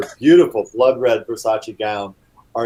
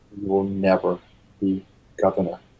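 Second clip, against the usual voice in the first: sinister, menacing, hushed half-whisper under the breath; 3 semitones lower, 5 dB quieter than usual. Voicing a character half-whispering behind another character's back: half-whispering menacingly. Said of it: "just looks over and whispers behind Bradley's back".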